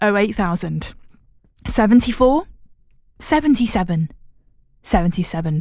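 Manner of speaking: slow, deliberate, each digit carefully spaced out. A presenter repeating the phone number for viewers, saying it slowly. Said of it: "I'm going to say it slowly".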